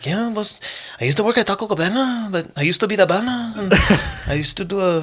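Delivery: fast, very high, rushed stop-start patter. Recalling a favorite who talked about his old jobs: imitating someone's fast talking. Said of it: "he had such a fast like way of talking".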